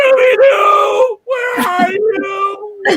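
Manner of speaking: mock wailing call, very high, slow and loud.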